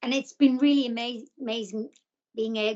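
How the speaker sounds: stuttering, stumbling, repeating words. Answering the host's question about keeping her sense of humour, stuttering. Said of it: "I'm stuttering".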